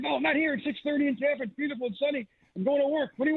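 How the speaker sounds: put-on gruff boss voice. Retelling a late-night phone call, doing the Larry David Steinbrenner voice. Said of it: "give you a Steinbrenner impression".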